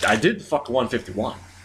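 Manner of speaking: ordinary talk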